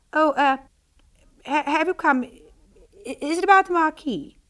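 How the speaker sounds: put-on stammering like a little girl. Ashamed after sounding affected, she asks the arriving men, stammering like a little girl. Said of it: "stammered like a little girl".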